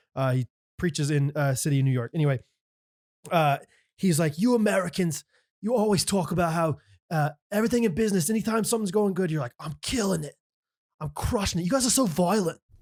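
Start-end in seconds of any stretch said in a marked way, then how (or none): 4.4-12.6 bad put-on Australian accent, higher, preacher-like. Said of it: "I'm doing such a bad Australian accent".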